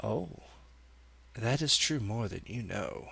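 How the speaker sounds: very throaty, soft voice from far back in throat. Voicing a character who finally answers the dog's owner after a delay, very throaty voice. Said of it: "this very throaty voice responds and says".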